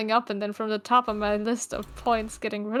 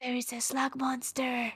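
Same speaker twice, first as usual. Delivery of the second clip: fierce, aggressive whispered yelling; 2 semitones higher, 8 dB quieter than usual. Yelling a warning to onlookers in character: aggressive whispering. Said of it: "Aggressive whispering".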